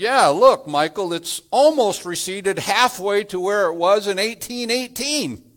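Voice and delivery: mock very loud call-out. Retelling speaking out to Michael in front of a group, in a very loud voice. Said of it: "with a very loud voice".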